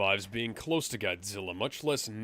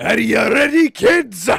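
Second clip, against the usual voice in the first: very high, very loud, belted-out shout; 12 semitones higher, 17 dB louder than usual. Calling out to the kids as a joke: Mr. Krabs voice. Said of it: "Now you sound like Mister Krabs".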